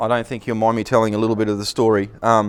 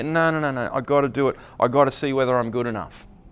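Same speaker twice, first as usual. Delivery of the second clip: ordinary talk, nothing marked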